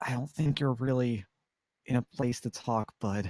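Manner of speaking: whispering in a character voice. Turning back to another character in a game, whispering in character. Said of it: "just whisper".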